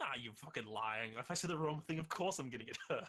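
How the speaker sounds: incredulous, scoffing disbelief. Voicing a character who doesn't believe he won't be hurt: disbelieving. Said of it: "there's an immediate wave of disbelief".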